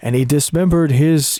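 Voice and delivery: put-on documentary narrator voice. Retelling what a documentary playing in the background said: imitating a documentary narrator. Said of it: "documentary guy going".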